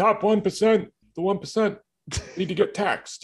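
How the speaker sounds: high-pitched, slow, deliberate, drawn-out delivery. Doing a quick impression after being asked for one: Bernie impression. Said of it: "you need to do your Bernie impression".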